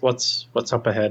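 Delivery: hardly-there, faint half-whisper, barely audible. Asking Chirk what is up ahead: barely a half-whisper. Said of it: "barely a whisper".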